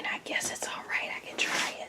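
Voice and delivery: hushed, very quiet, barely voiced whisper. Repeating what mom just said while she tried the food: imitating someone whispering. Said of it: "She's whispering".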